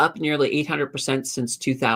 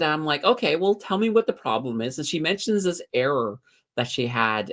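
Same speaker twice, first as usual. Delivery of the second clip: ordinary delivery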